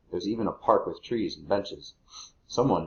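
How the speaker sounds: plain reading voice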